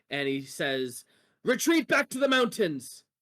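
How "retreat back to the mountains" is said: booming, very high-pitched loud shout. Wantar shouts an order to his army, in a booming shout. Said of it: "a booming, booming voice".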